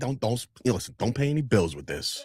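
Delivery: put-on old-school, fatherly dad voice. Retelling the dad handing over an envelope: imitating an old-school dad. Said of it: "like, a very old school dad".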